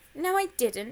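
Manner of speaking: loud, protesting, objecting tone. Reading George as he answers Annie in the story, protesting. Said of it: "protested George".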